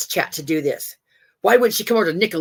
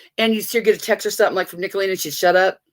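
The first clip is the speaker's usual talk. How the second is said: ordinary talk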